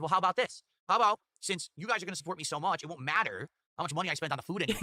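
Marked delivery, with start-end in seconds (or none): none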